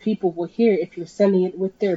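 ordinary delivery

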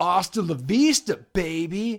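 put-on strong California accent. Mocking how a guy talks: thick California accent. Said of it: "He's got a thicker California accent".

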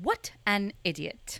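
put-on stern, scolding tone in a British accent. Asked how Hermione scolds the boys, the speaker answers with a Hermione impression. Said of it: "Let's hear a British accent".

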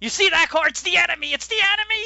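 put-on shrill, very high, loud rant. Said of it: "She's going off".

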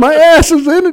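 very high-pitched scream. Retelling being pinched in a truck door: imitating someone screaming. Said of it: "I'm just screaming".

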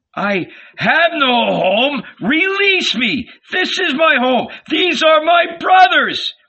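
very high outcry, rising and climbing throughout. Jesus, dragged along by his brothers, answers them before the crowd, crying out. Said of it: "cried Jesus".

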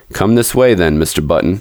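ordinary delivery

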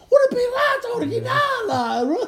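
very high, shrill, swooping, terrified scream. Retelling old ladies fleeing a store, imitating someone screaming. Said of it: "run for their life to get out of the store screaming".

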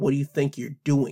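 ordinary talk

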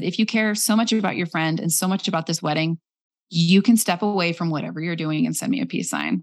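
ordinary delivery

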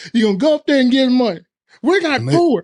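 put-on country accent.

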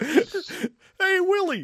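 very high-pitched alien puppet voice. Told that your Jerry Seinfeld sounds more like Alf, answer in an Alf voice. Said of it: "sounds more like Alf".

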